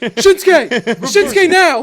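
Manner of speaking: very loud, shrill, high wrestling-ring yell. Joking about bad advice for wrestlers: John Cena impression. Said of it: "That was my John Cena impression".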